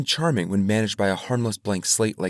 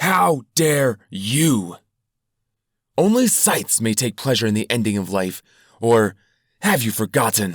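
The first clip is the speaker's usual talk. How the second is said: screaming, yelling through gritted, clenched teeth; 4 dB louder than usual. Narrator reading a character screaming at a crowd, screaming through gritted teeth. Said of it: "he screamed at them through gritted teeth".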